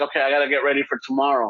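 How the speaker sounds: plain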